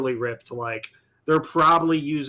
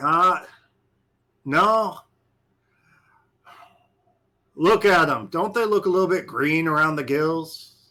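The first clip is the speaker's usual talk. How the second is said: put-on thick drawling heavy Southern accent; 3 semitones higher than usual. Retelling what a man said to the ones in the back, thick southern drawl. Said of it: "you hear a thick southern drawl".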